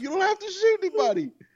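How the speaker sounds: words laughed out at very high pitch. Retelling own reply to the neighbor's threat: retelling own words while laughing. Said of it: "And I'm laughing".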